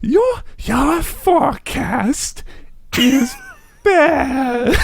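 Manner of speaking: loud stage whisper, very high, very slow, stretched. Someone asks for an impression of old Jenna, and the speaker tries: put-on loud whisper. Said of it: "I'm whispering loudly".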